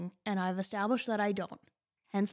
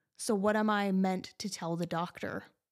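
usual speaking voice

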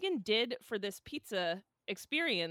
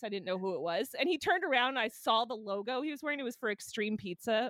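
plain

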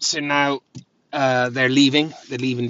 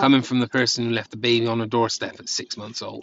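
ordinary talk, nothing marked

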